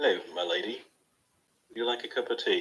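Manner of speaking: low, stately, laid-on put-on butler voice. Showing how they would talk if playing a butler, in a butler voice. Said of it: "I like your butler voice".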